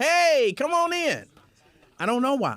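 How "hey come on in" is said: high, very slow, stretched called-out voice. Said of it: "I feel like I gotta yell".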